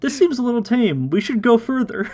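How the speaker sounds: high, mock smug writer's voice.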